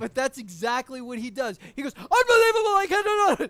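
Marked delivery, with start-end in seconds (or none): 1.9-3.5 very high, loud, sudden conniption outburst. Describing how a man flips out over the way a woman said something: retelling his sudden outburst. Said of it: "He just had like a conniption".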